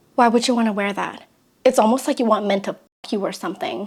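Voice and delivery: dead serious. Retelling what a man said outside a clothing store: imitating someone dead serious. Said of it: "dead serious".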